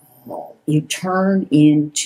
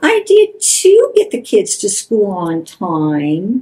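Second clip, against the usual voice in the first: high, whiny, defensive sing-song; 5 semitones higher, 4 dB louder than usual. Showing how a partner who feels attacked responds defensively: demonstrating a whiny tone. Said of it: "respond by whining and saying".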